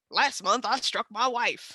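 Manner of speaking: put-on rural country-style accent. Showing the one accent they can do: Wilford Brimley impression. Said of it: "that's a country accent".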